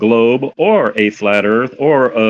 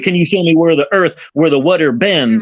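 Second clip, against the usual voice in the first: tone dripping with attitude, pitched up; 6 semitones higher than usual. Repeating another speaker's earlier question back at him: imitating an attitude-laden tone. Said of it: "When you attituded your way".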